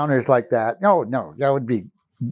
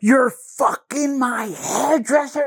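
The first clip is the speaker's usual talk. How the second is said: very high-pitched, full-force, full-lunged scream; 12 semitones higher than usual. Retelling the client's outburst in front of the bridesmaids: retelling a scream. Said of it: "at the top of her lungs".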